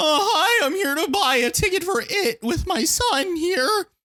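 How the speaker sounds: put-on very high, slow kid voice, cracking like a preteen. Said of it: "Like a voice cracking twelve-year-old".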